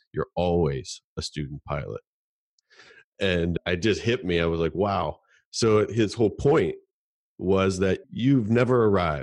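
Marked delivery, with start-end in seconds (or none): 0.2-2.0 put-on dry deadpan, voice dropped low. Retelling a man's reply to the speaker's remark, imitating a deadpan reply. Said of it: "he just looked at me deadpan".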